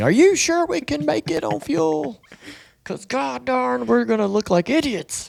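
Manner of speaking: acted, very high, furious yelling. Retelling questioning the engineers about fuel: imitating shouting at engineers. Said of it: "shouting at them".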